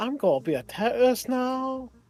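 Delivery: very high, evil character voice. Imitating a game character who sounds like Uncle Roger: evil Uncle Roger voice. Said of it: "they sound like evil Uncle Roger".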